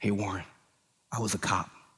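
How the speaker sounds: half-whispered, very quiet, secretive tone. Retelling a friend confiding a past job: imitating a half-whisper. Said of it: "he whispered to me".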